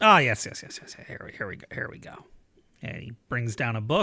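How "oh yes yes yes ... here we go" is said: mumbled, muttered under the breath. A character rooting through books on the wall, muttering to himself. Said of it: "muttering to himself".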